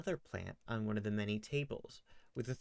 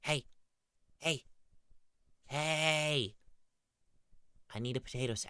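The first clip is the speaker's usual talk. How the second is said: small, high voice with each "hey" drawn out; 5 semitones higher than usual. Marigold shakes the listener's body to get attention, in Marigold's little voice. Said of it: "you hear Marigold's little voice going".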